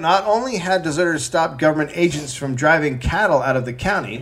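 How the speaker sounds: ordinary talk, nothing marked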